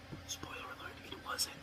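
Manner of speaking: very quiet, hushed, breathy whisper. Speaker previewing the week's upcoming movies: whispering. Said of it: "I'm going to stop whispering now".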